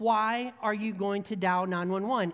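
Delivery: put-on loud voice. Retelling an angry customer's question about calling 911: imitating someone saying it loudly. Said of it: "he said it really loudly".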